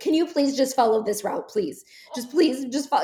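acted desperate pleading tone. Retelling how a friend begged a driver to follow the app's route, imitating a desperate plea. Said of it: "in like desperate voice was like".

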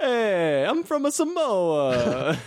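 very high, goofy, bad fake Italian accent. Asked about your accent, insist where you're from in an accent that sounds italian. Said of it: "That's Italian, man".

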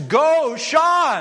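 big, booming, loud shout. Retelling hearing a teacher shout from the stands during a game, in Dr. Caesar's big booming voice. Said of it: "I heard this big booming voice".

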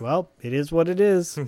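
put-on flat, level, emotionless tone. Retelling a story, the speaker imitates a man's reaction, imitating an emotionless tone. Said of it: "kind of, like, emotionless about it".

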